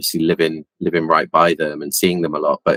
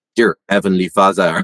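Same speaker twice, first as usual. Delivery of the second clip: put-on French accent; 3 semitones higher, 4 dB louder than usual. Retelling how a friend prayed with investigators: put-on French accent. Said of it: "pray in a French accent".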